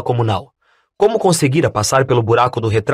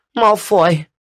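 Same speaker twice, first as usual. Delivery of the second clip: trembling, quavering, high-pitched, shaken voice; 5 semitones higher than usual. Reading a story aloud, a boy answering what happened: trembling voice. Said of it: "disse Neville com a voz trêmula".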